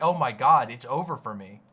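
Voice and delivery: quavering, shaky, defeated, despairing lament. Imitating how the man with the shaky voice sounds: imitating a shaky despairing voice. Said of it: "he sounds like he's like".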